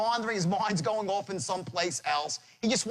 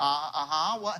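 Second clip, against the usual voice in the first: baffled, puzzled, caught-off-guard tone; 3 semitones lower than usual. Imitating a prospect hearing the line: imitating a confused prospect. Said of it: "He's like".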